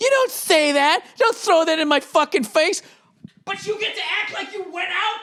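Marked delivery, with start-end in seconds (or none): 0.0-2.8 play-acted, angry, heated arguing voice. Retelling the wife's reply in an argument: imitating wife getting mad. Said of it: "she got mad at me going".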